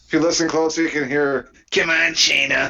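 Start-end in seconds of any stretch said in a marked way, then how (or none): 1.7-2.7 rough, creaky, raspy wrestler voice. Joking about a wrestler copying another, doing a Seth Rollins impression. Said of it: "That's such a great impression".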